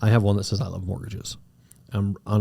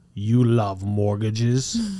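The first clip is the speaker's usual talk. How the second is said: heavy, thick, exaggerated Eastern European accent; 4 dB louder than usual. Retelling a lady's question about his shirt, in a thick eastern european accent. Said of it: "really like thick, like almost like Eastern European accent".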